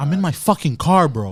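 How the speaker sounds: mock pushy, confrontational, a little aggressive tone. Retelling a run-in with a worker at the window: imitating own aggressive reply. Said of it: "So I got a little aggressive".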